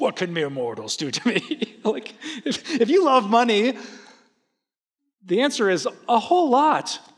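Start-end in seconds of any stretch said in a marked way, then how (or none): 0.0-1.8 grand, epic, dramatic fantasy-saga proclamation voice. Quoting a Bible verse aloud, Lord of the Rings style. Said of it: "say it like you're in the Lord of the Rings".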